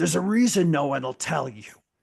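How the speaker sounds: loud, calling-out elf warrior voice. Voicing an elf with an axe who hears the listeners talking: bellowing out. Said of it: "he kind of bellows out and he says".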